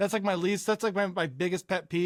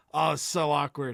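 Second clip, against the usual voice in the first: usual speaking voice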